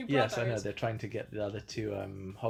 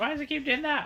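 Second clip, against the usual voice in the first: imitated grandmother voice; 6 dB louder than usual. Retelling how Granny reacted while watching the film: imitating Granny annoyed. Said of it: "She's like".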